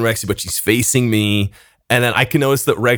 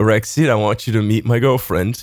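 put-on speech with laughter mixed in. Retelling an introduction while laughing: imitating laughing while talking. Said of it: "I just start dying laughing, and I go".

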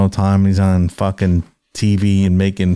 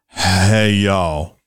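sluggish fake wrestler voice. Copying the lazier catchphrase delivery: lazy Scott Hall impression. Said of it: "That's good".

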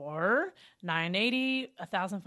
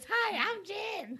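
squeaked out in a very high-pitched voice; 13 semitones higher than usual. Two speakers compare how they imitate each other; the speaker imitates Jen. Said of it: "Do I sound like this?".

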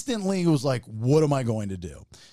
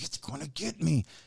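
mock whisper, quieter; 2 semitones higher, 8 dB quieter than usual. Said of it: "still whispering".

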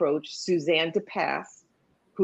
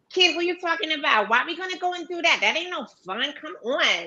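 very high, put-on Brooklyn accent, girl voice; 12 semitones higher than usual. Voice actor recalls auditioning for a Brooklyn character, imitating a niece. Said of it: "my niece talked just like this".

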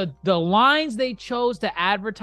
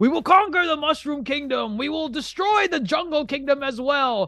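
rousing delivery, raised and pitched high; 5 semitones higher than usual. Retelling a scene where Bowser is riling up his troops: Bowser rallying his troops. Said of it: "riling up his troops to say".

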